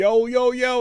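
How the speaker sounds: high, loud, freaked-out yell on "yo".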